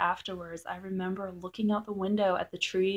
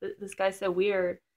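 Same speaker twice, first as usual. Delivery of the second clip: ordinary talk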